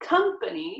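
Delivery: "company" with first syllable "com" stressed. Contrasting english with french pronunciation: stress on com in company. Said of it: "in English where the stress is on the first syllable".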